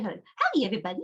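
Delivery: put-on tiny, small little-girl voice. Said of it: "her voice is just that little girl voice".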